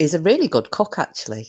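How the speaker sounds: sounds surprised, with a swooping tone. Speaker talking about the person who cooked meals for them; sounding surprised. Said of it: "I don't know why I'm sounding so surprised".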